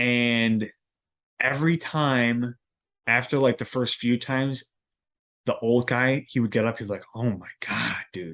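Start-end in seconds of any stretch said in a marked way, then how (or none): 7.1-8.4 mock muttering under breath, quieter. Retelling how an old guy reacted each time he got up, imitating a mutter under breath. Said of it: "Just like kind of under his breath".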